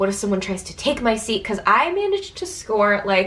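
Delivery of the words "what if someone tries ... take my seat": usual speaking voice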